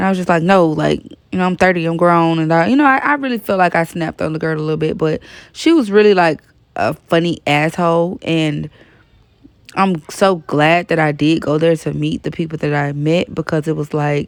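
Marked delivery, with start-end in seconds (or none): none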